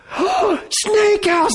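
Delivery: put-on very high-pitched, thrilled, excited little kid voice. A father retells his son recognizing where they are, imitating his son's excitement. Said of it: "he's all excited".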